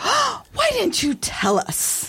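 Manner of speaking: indignant, very high, swooping pitch. Retelling what the mother said on hearing the diagnosis: imitating an indignant question. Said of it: "my mother turns to me indignant and says".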